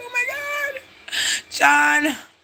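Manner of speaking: put-on shrill, tearful, drawn-out, high panicked wail. Retelling a dream couple in an elevator, imitating a crying panicked woman. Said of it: "they're crying, they're like".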